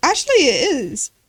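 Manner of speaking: sincere, earnest, proud, no joke in it. Retelling a father's reply about old cars, imitating a proud reply. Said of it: "he said it in, like, an actual, like, proud thing".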